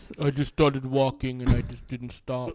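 flat, unexcited talker voice. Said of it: "He kinda sounds like Lorne Michaels".

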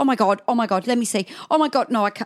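mock panicked voice. Retelling a partner's reaction to the news: imitating someone panicking. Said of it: "he freaked out".

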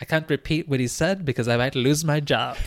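put-on South African accent, commentator style. Quoting a tennis commentator on the radio: South African accent impression. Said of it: "That's not a bad South African accent".

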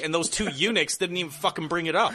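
high, heated, worked-up ranting yell. Complaining that two commentary partners never brought it up, yelling. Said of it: "I'm yelling because".

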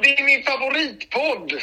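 put-on Gothenburg accent. Calling into the podcast, the caller answers in a put-on Gothenburg accent. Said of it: "sa jag på göteborgska".

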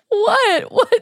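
high, loud, squealed shocked disbelief.

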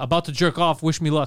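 ordinary delivery

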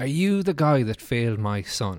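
plain

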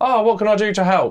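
mock over-loud announcer voice, high-pitched and showy. Mocking a man who offers help after everything is tidied, with a mock-loud offer to help. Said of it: "say it so very loudly".

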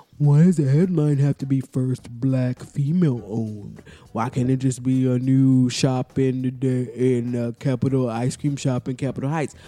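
scornful, derisive put-on voice. Reading aloud a stranger's online comment, imitating the commenter's imagined voice. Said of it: "this is what I imagine his voice is".

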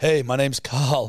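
mock terrified, put-on scared voice. Mocking how a name sounds when said aloud: mock terrified voice. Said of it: "it just sounds like you're terrified".

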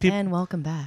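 mock, imitated mellow put-on voice. Podcast co-host mimicking her co-host's usual intro, imitating Kaveh's mellow voice. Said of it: "when you're mellow".

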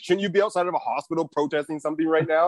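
usual speaking voice

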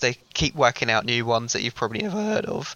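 voice cracking and breaking. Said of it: "I'm gonna ignore that voice crack there".

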